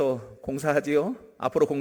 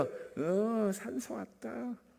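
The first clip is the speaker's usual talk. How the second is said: put-on very quiet, feeble, lifeless voice; 7 semitones higher, 10 dB quieter than usual. Imitating a father on the phone: mock-weak dying voice. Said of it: "다 죽어가는 목소리로".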